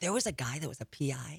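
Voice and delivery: hushed whisper. Speaker describing people they met, whispering. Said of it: "I don't know why I'm whispering".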